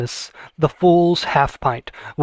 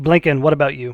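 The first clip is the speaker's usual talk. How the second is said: plain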